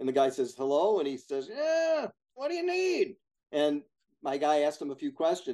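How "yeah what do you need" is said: put-on very high-pitched elderly man's voice. Retelling a cold call, imitating the building's buyer answering the phone. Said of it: "let me imitate him".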